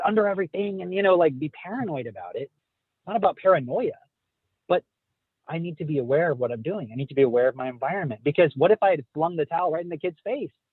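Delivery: ordinary delivery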